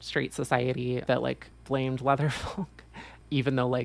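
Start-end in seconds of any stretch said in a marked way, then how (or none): none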